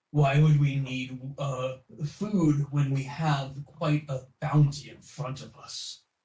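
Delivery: rough, gruff, growling wolf-like voice. Making up a character's reply on the spot, the speaker answers in a gruff wolfish voice. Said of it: "in like a, a gruff wolfish voice".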